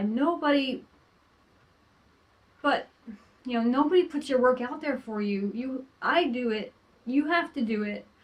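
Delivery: emotional, insistent, near tears, fighting back tears. A self-published author talks about slow book sales, holding back tears. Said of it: "I'm trying not to cry".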